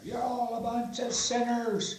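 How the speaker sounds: very high, shrill, loud preacher yell. Retelling a joke about a replacement priest's sermon: imitating a preacher yelling. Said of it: "he started yelling at".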